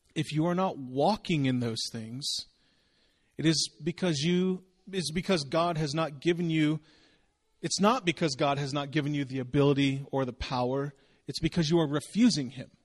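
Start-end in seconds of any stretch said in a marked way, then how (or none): none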